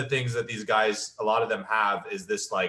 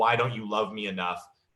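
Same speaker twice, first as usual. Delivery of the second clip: mock crying, pleading tone. Retelling asking a guy about his perfect girl, imitating her crying and pleading. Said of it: "she starts crying and saying".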